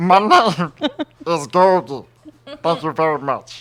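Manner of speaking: very slow, nerdy voice, every word drawn out. Doing a requested Muppet impression, introducing the character: Gurgle voice. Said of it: "But your best is Googie".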